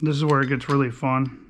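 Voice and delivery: ironic, sarcastic delivery meaning the opposite. Explaining the next repair step with a lock plate puller: sarcastic. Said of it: "That's me being sarcastic".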